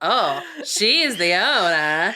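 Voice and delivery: very slow, loud, sassy, very drawn-out delivery. Retelling what a waiter in a film said: imitating a sassy waiter. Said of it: "the sassy, like, little, like, Mexican waiter".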